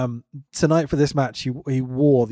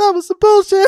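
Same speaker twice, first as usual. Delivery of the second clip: very high-pitched, very loud shouted exclamation; 10 dB louder than usual. Retelling what a wrestler said after a low blow: imitating Keith Lee's high-pitched voice. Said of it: "that was funny in the high-pitched voice".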